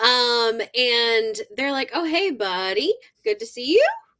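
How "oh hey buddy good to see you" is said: pitch rising in a questioning lift on final you. Retelling how characters in a book greet a newcomer: imitating a rising question tone. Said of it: "Question mark goes up at the end".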